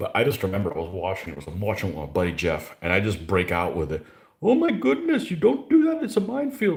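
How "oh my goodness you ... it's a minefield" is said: loud, very high put-on Indian accent, blurted out. Retelling a reaction while watching with a buddy: imitated Indian accent. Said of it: "in my Indian accent".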